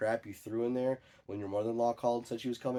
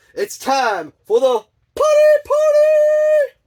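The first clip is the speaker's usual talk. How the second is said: raised voice, higher and louder; 19 dB louder than usual. Calling out the catchphrase along with viewers after asking them for louder: louder.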